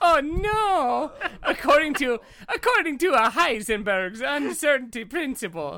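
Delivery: high, laughing, hammed-up mock Italian accent.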